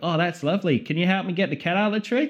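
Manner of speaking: put-on Australian accent. Acting out a woman answering the detective: put-on Australian accent. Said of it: "in the Saw Australian version".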